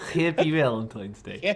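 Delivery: fake made-up Eastern European accent. Voicing a character giving a holiday greeting, in a made-up eastern european accent. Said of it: "Why did we make them Eastern European?".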